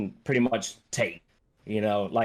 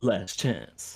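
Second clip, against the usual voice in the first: threatening put-on character voice; 4 dB quieter than usual. Describing a game scene to friends, imitating the character's voice. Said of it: "Give me the voice".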